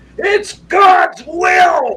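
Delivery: furious, very loud, shrill, drawn-out scream. Retelling how a man screamed at the speaker, retelling a scream. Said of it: "he literally screamed at me".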